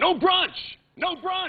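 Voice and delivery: mock very high shout, yelled. Retelling what a cyclist up ahead yelled during a group ride, retelling a guy's yell. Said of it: "he yells out".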